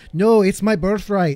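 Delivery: loud put-on patois accent, badly done. Retelling a character's line from the show: attempted patois accent. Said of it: "Sorry about the patois".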